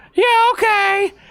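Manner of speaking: squeaky, very high-pitched voice. Retelling a short woman at the shelf answering her, imitating a squeaky voice. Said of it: "she had like a squeaky voice".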